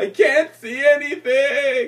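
shrill, very high, loud tearful crying. Speaker retelling what they cried to the teacher at twelve: retelling a tearful cry. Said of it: "I would start to cry".

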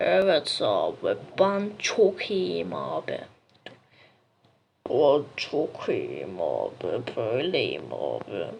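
weird, very low, slow mumble, drawn out deep.

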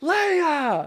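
loud high-pitched shout. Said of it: "she screams her name really loud".

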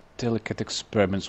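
ordinary delivery

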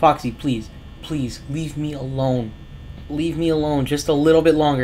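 imploring, pleading, begging tone. Gamer pleading with a game character to leave them alone longer, begging. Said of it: "That's all I'm begging".

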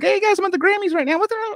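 very high, squeaky, goofy voice impression.

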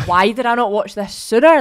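loud, high-pitched, amazed exclamation. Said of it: "and I was like".

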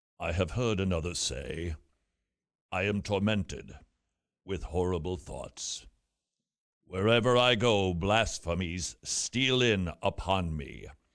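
low, somewhat British, authoritative preacher voice. Presenting it for the listeners' consideration, the speaker quotes a sermon in his Charles Haddon Spurgeon impression. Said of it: "my impression of Charles Haddon Spurgeon".

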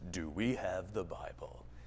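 very low, slow, ominous documentary narrator voice. Speaker mimics a guy on history tv programs, ominous documentary narrator voice. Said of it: "some guy with this ominous voice".

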